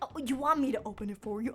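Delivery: keen, pushy, excited, eager urging. Retelling urging friends to open gifts early: imitating own excited urging. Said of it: "I get so excited".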